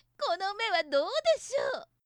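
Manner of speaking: high, jeering laughter while mocking. A character bursts out laughing and mocks, laughing mockingly. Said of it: "そんなことを言いながらまた転げるように笑っていました。".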